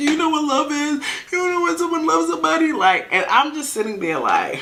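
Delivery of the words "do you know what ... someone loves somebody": very high, blubbering boo-hoo sobbing voice. Retelling how a drunk man pleaded with the speaker: imitating someone crying. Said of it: "Boo who crying, talking about".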